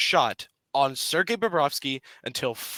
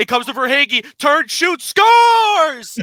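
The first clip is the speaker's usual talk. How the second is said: very high, very loud play-by-play goal call; 12 semitones higher, 11 dB louder than usual. Acting out the radio call of the Panthers' series-winning goal, as a hockey goal call. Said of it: "Do I need to make the call?".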